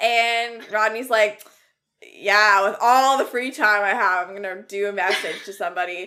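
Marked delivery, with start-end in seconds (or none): 2.0-6.1 loud, sarcastic delivery. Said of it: "like, all sarcastic".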